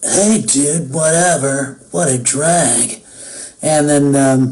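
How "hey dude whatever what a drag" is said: slow, easygoing surfer dude, "drag" drawn out. Answering why he sounds like a surfer boy, doing Shikamaru's dude voice. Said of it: "sort of a dude".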